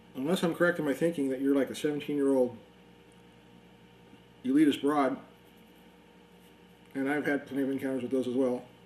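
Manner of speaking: speaking with mouth full of food. Answering someone's points from a morning conversation, talking while eating. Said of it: "Excuse me, I'm eating".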